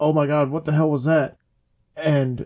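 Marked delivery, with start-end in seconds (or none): none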